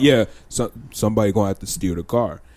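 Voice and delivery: put-on deep voice. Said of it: "deep ass voice, deeper than yours".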